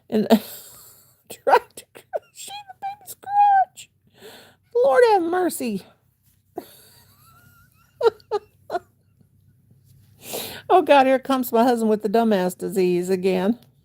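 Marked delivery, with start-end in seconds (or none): 0.1-11.0 high, swooping speech through helpless laughter. Crocheting a baby's crotch and laughing hard while talking. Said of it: "I'm laughing so hard".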